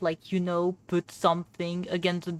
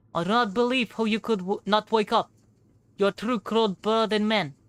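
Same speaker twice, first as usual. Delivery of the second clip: put-on Russian accent, higher; 3 semitones higher than usual. Voicing a character who wouldn't wake up in the wardrobe: russian accent. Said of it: "it's the one with the Russian, uh, accent".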